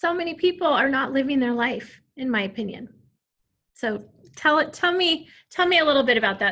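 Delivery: overcome with emotion, very loud. Remembering a late mother, then asking the other person to share, emotional. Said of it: "I get emotional every time I talk".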